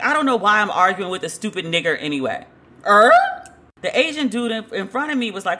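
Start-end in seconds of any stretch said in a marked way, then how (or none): none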